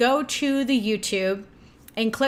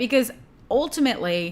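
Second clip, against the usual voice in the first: usual speaking voice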